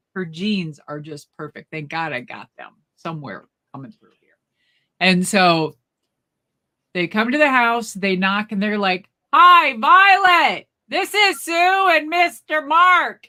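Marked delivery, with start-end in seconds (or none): 9.4-13.1 very loud, very slow, drawn-out yell. Retelling visitors greeting Violet at her door, retelling a loud yell. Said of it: "Why are you guys yelling?".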